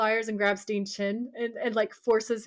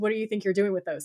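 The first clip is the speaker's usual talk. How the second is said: mock-panicked voice, faster. Retelling a story, voicing a boy's line to a man holding pliers, imitating panic. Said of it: "Sam's all panicked and he says".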